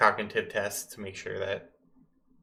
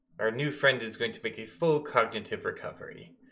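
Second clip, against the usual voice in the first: normal talking voice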